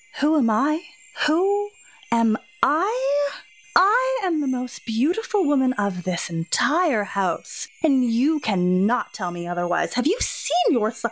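haughty, contemptuous, scornful, sneering woman's voice. A vain lady in silver mocks a guest in the dining hall, haughty and sneering.

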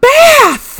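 shrill, booming, very high, drawn-out squeal. Recounting river water splashing over him on a boat: retelling a shout. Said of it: "he shouts".

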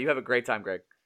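heavily sarcastic, low and soft. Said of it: "I'm totally being sarcastic".

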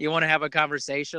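ordinary talk

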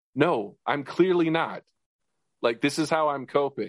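laughing that cracks toward tears, half crying. Retelling a comedy sketch moment: imitating Kate McKinnon laughing, almost crying. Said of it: "her just laughing, almost crying".

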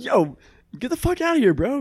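mock pissed-off, very high tone. Recounting a reply to a man who yelled out a window at them, retelling an angry retort. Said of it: "I got so pissed".

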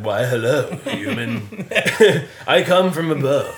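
booming, slow, loud heroic voice. Imitating a tall relative who sounds like Thor: Thor voice. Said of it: "he sounds like Thor".

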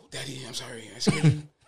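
put-on soft, little, hushed small child's whisper. Recounting waking up to find the kid standing there: imitating a child whispering. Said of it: "why you whispering?".

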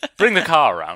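booming, loud, lofty, fancy Connecticut society accent. Joking about a Connecticut accent: put-on fancy Connecticut brogue. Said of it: "a nice Connecticut Bruges".

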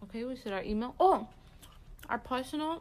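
chewing while speaking, mouth full. Wrapping up the show, giving the hosts' personal accounts: talking while eating. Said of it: "Sorry, I'm eating".

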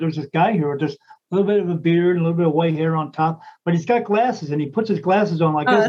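plain

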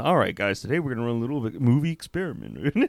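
soothing, easygoing, low, calming presenter voice. Imitating Tucker opening a science series: Tucker's calming voice. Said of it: "just calming voice".

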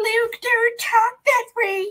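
very high, slow, mock put-on voice.

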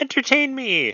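very high-pitched voice. Storyteller voices someone heard from behind the couch, in a high voice. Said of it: "in a high voice".

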